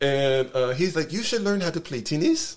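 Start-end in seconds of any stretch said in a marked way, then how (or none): 1.1-2.6 put-on high French-accented English, each word enunciated. Quoting a guy who spoke English and French: imitating a French accent. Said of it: "this French accent".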